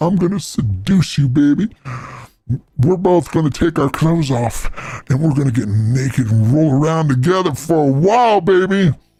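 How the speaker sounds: ordinary talk, nothing marked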